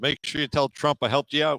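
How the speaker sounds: put-on Irish accent. Speaker retells a shopkeeper's parting words as they left, Irish accent. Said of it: "the shopkeeper in an Irish accent says".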